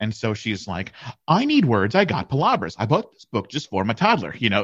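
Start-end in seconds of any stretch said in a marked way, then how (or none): 1.3-4.3 full-on put-on voice, swooping and sing-song. Retelling how a woman read from a toddler's Spanish book, in a complete mom voice. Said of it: "she's just like a complete mom voice".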